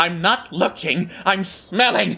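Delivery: jumpy, twitchy, paranoid voice with suspicious edge. Voicing the Rat King, who is looking around: twitchy, paranoid Rat King. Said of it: "twitchy and paranoid".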